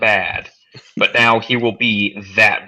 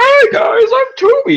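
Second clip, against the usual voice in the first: very high, slow, stupid-sounding voice; 6 dB louder than usual. Imitating a masked anime character's switch between voices: Toby's stupid voice. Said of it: "being reminded of his stupid voice".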